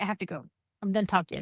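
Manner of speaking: normal talking voice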